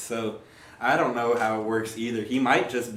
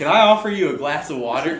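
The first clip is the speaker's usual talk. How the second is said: mock-suspicious, suspicious-sounding put-on tone; 5 semitones higher, 7 dB louder than usual. Acting out what he'll say when someone walks in, in a put-on suspicious tone. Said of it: "You just made that sound way suspicious too. Just, just the tone".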